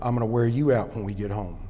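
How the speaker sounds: very low, quiet, hushed murmuring voice. Retelling what a man said while walking the speaker to the car, low voice. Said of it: "in that low voice said".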